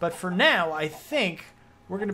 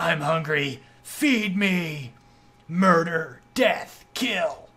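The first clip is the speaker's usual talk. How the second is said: slow, harsh, throat-shredding demonic voice; 4 dB louder than usual. Showing off a new demonic broadsword, voicing the demonic broadsword. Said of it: "I can't use that voice for very long without coughing my lungs up".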